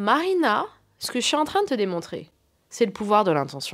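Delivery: little, small voice. Quoting what a woman told them at the doctor's, imitating a small voice. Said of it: "elle m'a dit d'une petite voix".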